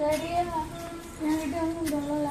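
put-on soft, high child voice.

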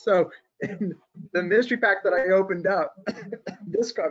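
choking back a laugh. Describing a card pulled from a mystery pack: trying not to laugh. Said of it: "I'm choking because I'm trying not to laugh".

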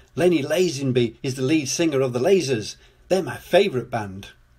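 usual speaking voice

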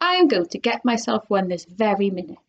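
plain

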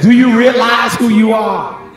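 high, loud chest-voice shout. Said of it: "say it with your chest".

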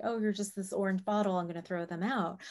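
ordinary talk, nothing marked

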